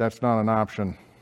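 muttered under the breath. Retelling a young man's remark after Tammy declined the food, said under his breath. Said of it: "he just said under his breath".

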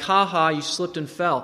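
ordinary talk

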